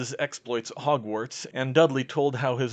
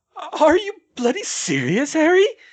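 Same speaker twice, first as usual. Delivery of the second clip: loud, shrill, very high, swooping squeak; 7 dB louder than usual. Narrator voicing Dudley's reply to Harry at the bar, squeaky voice. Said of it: "he squeaked".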